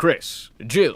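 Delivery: loud, raspy character voice from the back of the throat. Describing a game character's voice, imitating his line with a back-of-the-throat rasp. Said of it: "back of the throat rasp".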